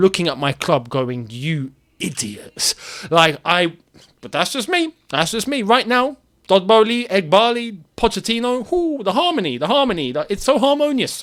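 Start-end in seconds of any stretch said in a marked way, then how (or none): 1.3-2.8 fuming, angry, scornful tone. Pretending to look at the club and scold it: mock fuming. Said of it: "I am fuming".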